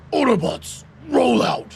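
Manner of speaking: attempted robot leader voice that falls short. Driving in a game, trying an Optimus Prime catchphrase: attempted Optimus Prime voice. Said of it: "I can't do an Optimus voice".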